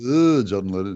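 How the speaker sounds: imitated voice, far-off sounding and fast. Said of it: "That's my [name] imitation".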